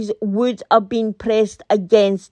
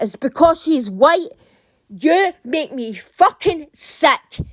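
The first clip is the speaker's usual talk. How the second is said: ranting, much higher pitch; 3 semitones higher than usual. Speaker denouncing a woman over a murdered woman's death, ranting. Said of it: "I'm sorry I'm ranting about this".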